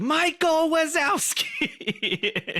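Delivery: very high-pitched voice. Retelling a chase scene from Monsters, Inc: imitating the Monsters, Inc snake-haired lady. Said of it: "And she's like".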